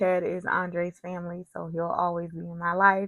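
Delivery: plain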